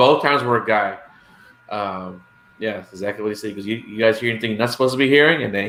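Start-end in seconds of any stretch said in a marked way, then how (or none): 3.6-5.4 mock teasing, knowing, amused and pointed tone. Retelling what a man who pulled up in a truck said, imitating a man saying it with a big smile. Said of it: "he had a big smile on his face when he said that".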